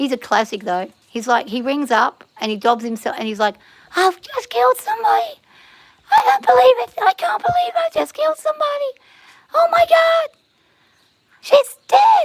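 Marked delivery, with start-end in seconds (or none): 4.0-12.2 sobbing hard at a very high pitch. Retelling a caller phoning in to confess a killing, Weepy Voice Killer impression. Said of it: "the Weepy Voice Killer".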